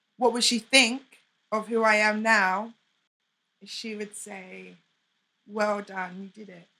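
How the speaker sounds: emotional, halting voice breaking up mid-phrase. Asked what someone would think of them now, the speaker answers, getting really emotional. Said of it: "Sorry, I'm getting really emotional".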